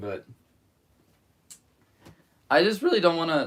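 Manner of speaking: loud, high-pitched voice crack mid-line. Talking through a problem he cannot solve yet: voice crack. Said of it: "that was a voice crack".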